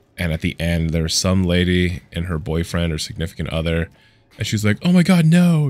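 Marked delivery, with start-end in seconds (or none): 4.9-5.7 mock theatrical, loud and high dramatic outburst. Retelling a lady's reaction at the end of a movie: imitating a dramatic woman. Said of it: "really dramatic".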